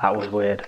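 low, mumbled muttering under breath. Playing a character who just woke from a weird dream: muttering to himself. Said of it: "just sort of mutters to himself".

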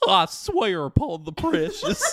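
loud, swooping hillbilly cartoon voice. Doing Gollum's line as if Goofy played the role, in a weird hillbilly Goofy voice. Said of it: "that was like a weird hillbilly Goofy".

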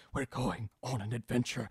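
whispery, breathy, hushed voice.

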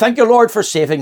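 high, loud, rushed, blurted cry.

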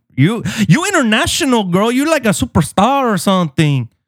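accent from Miami. Greeting friends in the room, then addressing a girl, in a Miami accent. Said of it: "You sound like you're from Miami".

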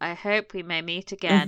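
put-on flat, robot-like delivery. Imitating how a character delivers a line on screen: imitating robotic line delivery. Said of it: "he's saying words like a robot".

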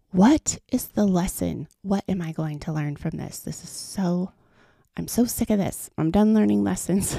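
ordinary delivery

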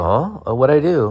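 high, mock-startled, feigned-innocent frightened voice. Retelling how a classmate reacted after swinging at the teacher: imitating someone acting scared. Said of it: "he'd look like a s-, like, scared".

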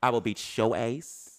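very slow, drawn-out, menacing voice. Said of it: "you told them what".

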